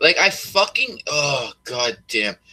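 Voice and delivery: agitated, angry, worked up, very slow outburst. Complaining about a narrative, needing to calm down: worked up and angry. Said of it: "I gotta calm down".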